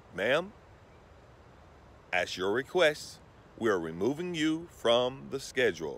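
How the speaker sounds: courteous, soft, polite, professional business-like tone. Retelling her reply to a woman cancelling her services, in a professional tone. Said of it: "handled like a professional".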